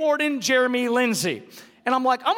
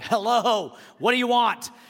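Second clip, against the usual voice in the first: put-on, slow, irritated, put-out voice; 2 semitones lower than usual. Retelling answering repeated unknown calls: imitating himself answering annoyed.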